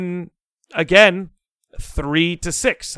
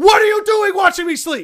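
put-on livid screaming, very high and shrill; 4 dB louder than usual. Retelling yelling at the person sharing their room, retelling a livid scream. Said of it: "I'm like screaming at him. I'm livid".

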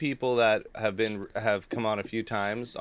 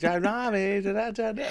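put-on small child voice, higher; 10 semitones higher than usual. Showing the voice they use for Maisie: little kid voice. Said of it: "like that?".

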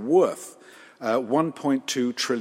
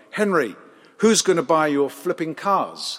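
put-on, very sharp, curt delivery; 4 semitones higher, 5 dB louder than usual. Retelling a union boss's answer to Henry at Ford, imitating a very sharp reply. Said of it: "Walter replied very sharply".

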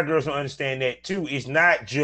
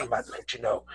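put-on whisper, lower and quieter; 3 semitones lower, 8 dB quieter than usual. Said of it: "I'm whispering".

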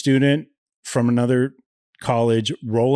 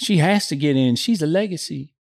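pitched-up Southern mother voice. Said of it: "Do that again?".

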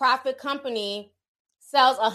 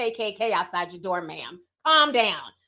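usual speaking voice

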